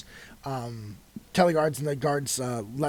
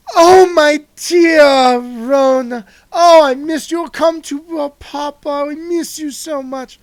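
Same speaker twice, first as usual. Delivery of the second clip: flamboyant, very high, loud doting father voice; 13 semitones higher, 13 dB louder than usual. A father character calls out from behind to his daughter: flamboyant doting father. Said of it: "this flamboyant uh, mo- approach".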